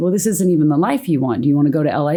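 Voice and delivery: ordinary talk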